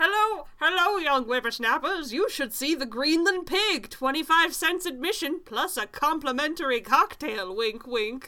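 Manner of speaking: put-on booming, loud, high-pitched old-fashioned sideshow barker voice. Acting out a sideshow pitch to lure customers, old-timey voice. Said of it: "I gotta do old-timey voice".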